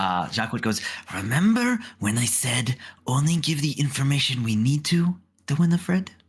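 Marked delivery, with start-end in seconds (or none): 1.1-6.1 whispering as quietly as possible. Voicing a character who pulls a companion close: whispering as quietly as possible. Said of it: "whispering as quietly as possible".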